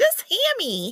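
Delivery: tiny, very high, squeaky little voice. Speaker looks forward to Hammy appearing and saying this, in a tiny little Hammy voice. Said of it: "a tiny little voice saying".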